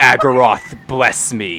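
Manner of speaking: low, rumbling growl like a dragon. Narrating a fight, voicing the Ascended: the Ascended's low draconic growl. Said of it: "lower and has this sort of draconic growl to it".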